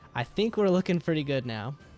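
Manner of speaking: audible thrill in the voice. Commenting on a card game turn going well: excited. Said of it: "If you can tell the excitement in my voice".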